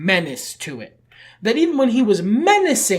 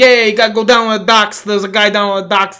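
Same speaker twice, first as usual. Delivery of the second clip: very loud, put-on goomba New York accent; 3 semitones higher, 9 dB louder than usual. Discussing an actor's performance, showing the role in a New York goomba accent. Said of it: "I'm a New York Goomba" accent".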